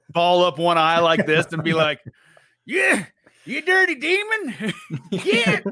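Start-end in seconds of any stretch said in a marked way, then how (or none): 2.7-5.6 very high, slow, put-on old prospector voice. Showing how to stand up to a ghost, the speaker does an old prospector voice. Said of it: "invoke the old prospector".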